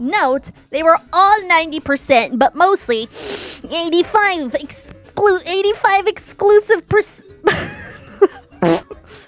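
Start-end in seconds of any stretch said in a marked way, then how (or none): 0.0-7.2 nerdy, big-brain know-it-all voice. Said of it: "I'm gonna do the nerd voice".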